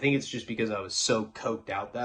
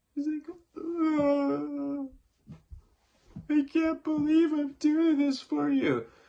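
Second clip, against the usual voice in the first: sobbing, tearful, very high pitch, very slow, drawn out. Retelling a girl's words as she clamped an arm: imitating someone crying. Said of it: "she's crying".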